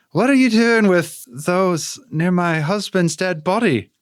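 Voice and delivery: put-on thick, overdone Irish accent. Voicing a female character who suddenly turns very offensively irish. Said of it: "she's gonna become Irish real fast".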